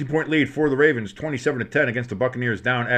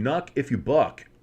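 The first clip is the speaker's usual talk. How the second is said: deliberately exaggerated plain, bland, standard-sounding voice. Game commentator voicing what a player is saying, in the whitest way possible. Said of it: "in the whitest way possible".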